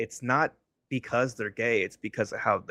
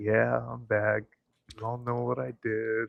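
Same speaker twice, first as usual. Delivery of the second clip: put-on miserable comic voice; 3 dB quieter than usual. Imitating a comic who is back after what he did: imitating Louis sounding miserable. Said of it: "he's just so extra miserable".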